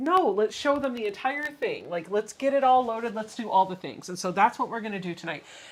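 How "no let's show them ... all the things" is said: normal talking voice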